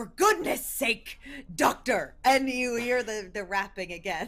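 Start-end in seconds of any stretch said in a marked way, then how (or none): 0.0-2.1 short, sharp, stout-sounding character voice. A short, thumb-shaped gent calls to the doctor at the door, in a stout, sharp voice. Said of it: "you see the bare and bald thumb-headed figure of a short, stout... Uh, sort of a, a, a brownish colored uh, very literally thumb shaped gent uh, in armor um, uh, sorry not in armor in a uh, in a, ... And this stout kind of sharp voice".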